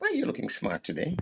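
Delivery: put-on fatherly tone. Retelling a question put to a young woman on a bus: imitating a fatherly tone. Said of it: "I said it in that fatherly tone".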